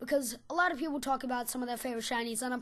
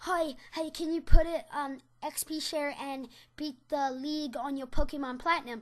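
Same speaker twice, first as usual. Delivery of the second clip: put-on childlike little kid's voice; 2 semitones higher, 4 dB louder than usual. Retelling trading a Pokemon to him, the speaker repeats their request in kiddie voice. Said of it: "I said it in a kiddie voice".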